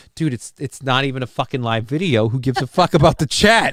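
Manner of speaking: muttered under the breath. Retelling what was muttered at the screen while muted: imitating his own muttering. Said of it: "I literally muttered to the screen".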